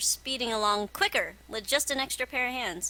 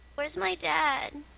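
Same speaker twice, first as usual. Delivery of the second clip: small, high-pitched voice; 6 semitones higher than usual. Narrating a scene as Odette speaks up from the corner, in a small voice. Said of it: "you hear a small voice from the corner".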